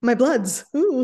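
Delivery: very loud vampire voice. Joking after talk of inflammation, speaker does a vampire voice. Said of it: "He sounded like a vampire then".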